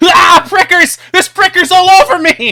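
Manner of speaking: yelping in pain. Voicing a character who jumped into a thorn bush: yelping in pain from thorns. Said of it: "he starts rolling around, covered in barbs".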